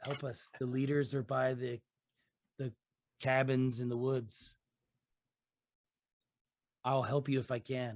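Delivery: whispered crow-like voice. Voicing a crow that gives the players a message: whispering crow. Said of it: "the crow whispers to you".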